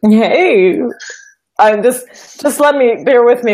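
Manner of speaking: loud talk through a full mouth, still chewing. Greeted on the show before swallowing, asking for a moment, talking with mouth full. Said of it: "Let me swallow".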